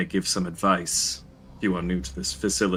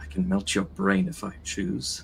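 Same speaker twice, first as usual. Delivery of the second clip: faint, hushed mutter under the breath. Describing a character to another player, faint muttering under breath. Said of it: "under his breath, you could just hear kind of faint muttering".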